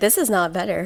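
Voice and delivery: ordinary talk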